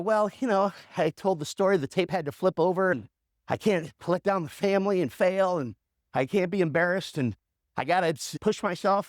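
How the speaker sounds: normal talking voice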